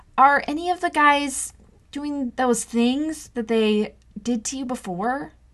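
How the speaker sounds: stumbling over words. Narrator presses him again after he stays silent, stammering over the words. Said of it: "stammering over my words".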